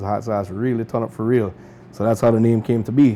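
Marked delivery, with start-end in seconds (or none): none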